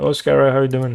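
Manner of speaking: strong Irish accent. Speaker demonstrates the accent they cannot understand, in a strong Irish accent. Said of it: "Like the strong Irish accent".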